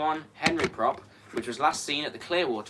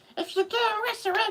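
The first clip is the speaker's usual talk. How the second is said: very high, squeaky put-on character voice. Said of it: "so he sounds".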